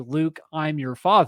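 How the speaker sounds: ordinary talk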